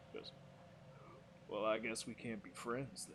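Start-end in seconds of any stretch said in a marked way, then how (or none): 1.5-3.2 low western cowboy drawl. Voicing a foe who was just shot at: cowboy drawl. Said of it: "did you put, like, a cowboy drawl?".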